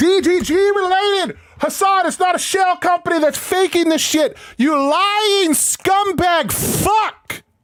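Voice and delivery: loud furious shouting. Reacting angrily to a remark about Hassan: angry yelling. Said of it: "I'm getting loud".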